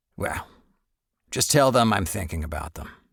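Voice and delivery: rough gravelly grown man's voice. Reading a story, voicing the sick father on the phone: gravelly voice. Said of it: "my father's gravelly voice".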